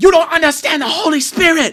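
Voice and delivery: shrill, very high, very loud screaming rant. Retelling a kid in a suit at school yelling at guys, imitating a kid screaming. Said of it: "he's screaming this at this guy".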